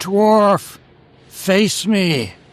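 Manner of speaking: very high, in-character shout. Calling out in character at a locked door: shouting in character. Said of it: "I shout".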